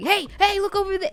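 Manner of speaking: commanding, authoritative voice. Imitating a teammate calling out an enemy: imitating a commanding voice. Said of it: "that's the tone that she has".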